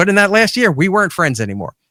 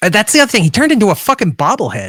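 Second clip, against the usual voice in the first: ordinary talk, nothing marked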